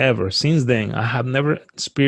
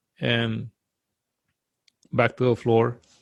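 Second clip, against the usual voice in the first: ordinary talk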